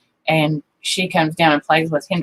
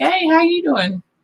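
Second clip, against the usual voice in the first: high, slow sweet cooing voice. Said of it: "I was like".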